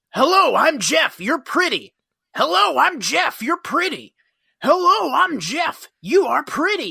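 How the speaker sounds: high, gawking flirty voice like a wolf. Describing how the character Jeff goes from woman to woman: imitating Jeff. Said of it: "and he's just like".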